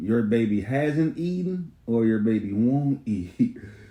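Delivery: mock, drawn-out, slow, sing-song sarcastic tone. Retelling a scene where a counter lady answers a mother: imitating a sarcastic clerk. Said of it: "Being sarcastic".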